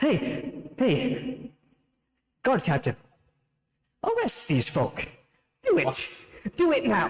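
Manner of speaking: very high, slow, eager, relieved, lightened-up tone. Voicing the Sultan as the guard captain enters: relieved eager command. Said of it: "his face lightens up like".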